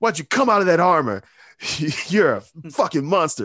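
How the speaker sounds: acted out, high-pitched, loud yell. Describing a player who insults Vader whenever he sees him, retelling yelled taunts. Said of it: "he's like yelling shit at Vader".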